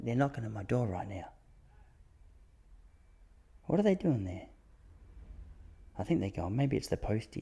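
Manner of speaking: very quiet hushed whisper, barely voiced. Reacting quietly to a knock at the door: whispering. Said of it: "Look at me whispering".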